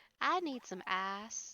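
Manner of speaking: slipped-into slow country accent, long vowel on "ice". Showing how the accent slips when not paying attention: slipped country accent. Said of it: "when my accent slips".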